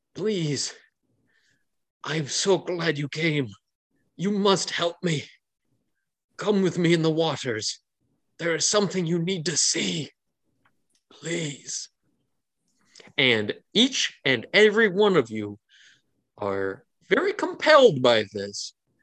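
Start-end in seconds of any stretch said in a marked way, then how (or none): 0.2-11.9 weak, helpless, desperate, begging tone. Voicing a slumped, dragging figure begging the party: helpless pleading. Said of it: "in a very helpless way, reaches out".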